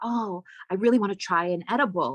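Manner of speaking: imitated whisper. Retelling what a woman at the table said: imitating a whisper. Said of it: "she whispers to me".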